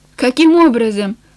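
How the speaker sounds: ordinary delivery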